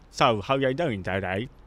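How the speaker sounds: slow, put-on Cockney accent, dropping the T's. Showing how a cockney host talked: imitating a cockney accent. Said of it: "They talk like this".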